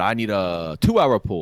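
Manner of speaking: put-on heavy, thick Korean accent, slow and deliberate. Quoting a man asking about repair time, in a thick Korean accent. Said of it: "with this very thick Korean accent".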